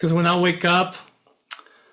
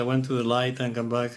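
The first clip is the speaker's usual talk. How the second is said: plain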